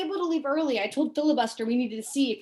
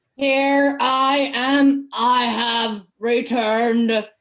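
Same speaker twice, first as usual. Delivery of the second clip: very loud, terrifying, booming voice through a mask; 9 dB louder than usual. Entering in a full hazmat suit, speaking through the mask: Vader-like terrifying voice. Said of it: "the voice is Vader-like and terrifying".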